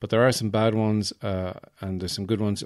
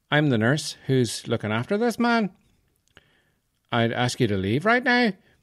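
sing-song fake Northern Irish lilt, rising ends; 5 semitones higher than usual. Imitating the nurse looking after a patient, questioning lilt rising at the ends. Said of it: "it goes up at the end of the sentence".

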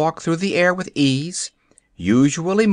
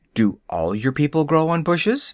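ordinary delivery

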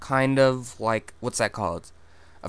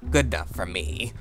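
put-on low, hushed, cackling crone witch voice; 5 semitones lower, 5 dB quieter than usual. Speaker talking to listeners, tossing off an aside in a witch voice. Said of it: "I made like a witch voice when I said that".

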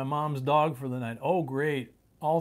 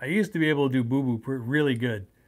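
usual speaking voice

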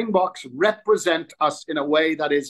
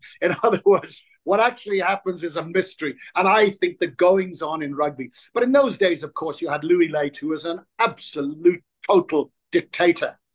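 ordinary talk

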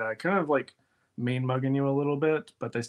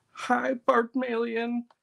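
sobbing, very high, cracking, breaking voice; 11 semitones higher than usual. Retelling a play character greeting the other Barbmalions, imitating weeping with a cracking voice. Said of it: "still actively weeping while talking and her voice is cracking".

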